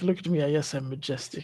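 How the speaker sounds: majestic cat voice. Voicing the purring cat's thoughts: voicing a majestic cat. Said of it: "It's like".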